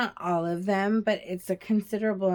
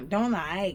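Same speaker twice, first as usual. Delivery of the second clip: English spoken with a put-on Chinese accent. Retelling what a picky two-year-old says after eating: imitating a Chinese accent. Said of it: "with this Chinese accent".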